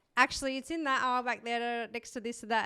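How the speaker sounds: plain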